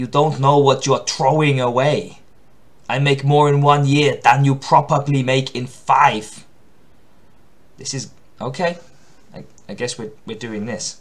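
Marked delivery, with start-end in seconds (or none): 0.0-6.5 put-on heavy Austrian accent, movie tough guy voice. Performing the Kurt Weimeister character, who is written like Arnie, in an Arnie voice. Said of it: "It's written like Arnie".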